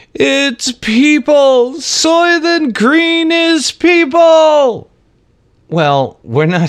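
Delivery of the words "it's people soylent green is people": mock scream, very high and drawn out. Retelling the end of Soylent Green: imitating Charlton Heston screaming. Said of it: "he's screaming".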